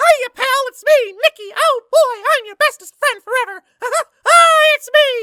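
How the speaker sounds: very high-pitched and loud. Explaining voice casting, demonstrating what an auditioner might do in a Mickey Mouse voice. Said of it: "Mickey Mouse has his particular voice".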